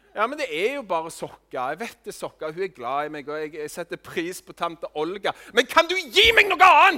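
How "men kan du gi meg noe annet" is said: shrill, very loud, high-pitched exasperated outburst. Voicing what one really thinks on getting socks from Aunt Olga, yelling a bit. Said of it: "sorry at jeg skrek litt nå".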